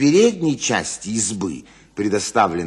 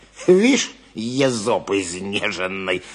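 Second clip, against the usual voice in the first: disdainful, contemptuous, scornful tone. Narrator reads a man's reply as he elbows the other away, contemptuous. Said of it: "презрительно ответил Моргач".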